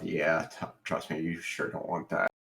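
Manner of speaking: low, soft mutter under the breath.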